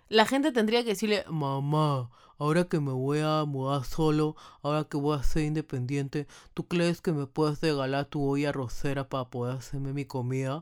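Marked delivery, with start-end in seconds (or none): 1.2-10.6 put-on dopey voice, lower and slower. The speaker acts out someone asking their mom for her pressure cooker, put-on dopey voice. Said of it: "con esa voz de huevón".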